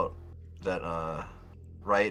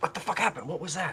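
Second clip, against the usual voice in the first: hushed whispering voice, higher; 9 semitones higher than usual. Voicing a character who finds a companion dragged back: whispering in character. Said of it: "Felix is whispering".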